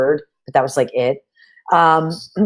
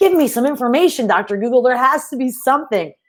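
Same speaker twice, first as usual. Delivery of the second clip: pitched-up, screaming yell; 8 semitones higher than usual. Retelling yelling at the computer for information: imitating own yelling. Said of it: "and just yelling at it".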